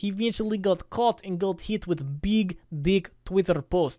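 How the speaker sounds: bad, terrible fake Russian accent. Telling how a new friend eventually got caught, in a terrible Russian accent. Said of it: "That was a terrible Russian accent".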